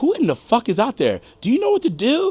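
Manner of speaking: very high, rising, swooping, furious scream. Recalling a woman screaming at him after work, imitating someone screaming. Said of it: "screaming at me because she's like".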